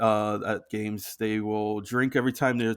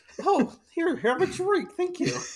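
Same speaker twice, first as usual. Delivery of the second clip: put-on eager, very high, sing-song little-kid voice. Teasing another speaker's retelling of a sale, imitating a little kid at a lemonade stand. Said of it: "You sound like a little kid at a".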